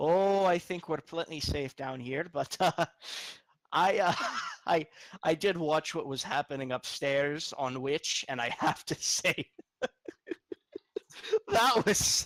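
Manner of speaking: amused dragon voice, talking through little chuckles. Narrating a game scene, the speaker voices a dragon, chuckling while speaking. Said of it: "He kind of chuckles to himself and he says".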